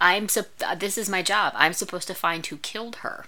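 normal talking voice

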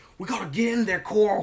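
put-on spread-out American Southern accent. Chatting about actors who hide their British accents: Rick Grimes Southern accent. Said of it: "this Southern accent is like".

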